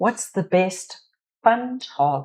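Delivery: sounding South African, South African accent. Reading an audience question aloud, accidentally sounding South African. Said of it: "that sounded very South African".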